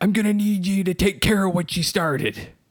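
very high, loud, hissed. Mr. Krabs speaks to SpongeBob, hissing. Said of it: "he hissed".

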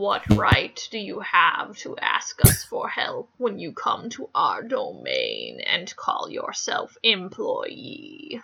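menacing, low, slow troll voice.

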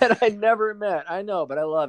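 very high, overcome with feeling. Speaking to a podcast partner about the partner, getting emotional. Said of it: "I feel like I'm getting emotional".

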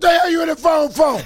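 very high, shrill, acted yelling. Acting out getting on offense when she finds something in the phone: acted yelling. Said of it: "Why are you yelling?".

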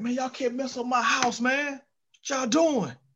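put-on fed-up, exasperated, pleading voice. Speaker recounting what a man screams in ignorant situations: imitating someone screaming. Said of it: "he's just screaming stuff like".

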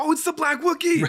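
very high-pitched, loud, excited scream. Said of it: "So I just screamed".

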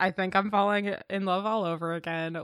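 usual speaking voice

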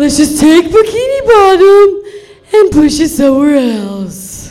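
loud, swooping, sing-song cartoon voice, "else" drawn out. Running through cartoon impressions for listeners, the speaker does a Patrick Star impression. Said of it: "This is my Patrick Star impression".

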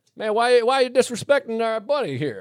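clumsy put-on Southern accent. Retelling a story, voicing friendly locals defending their buddy in a bad North Carolina accent. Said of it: "that wasn't a good accent for North Carolina".

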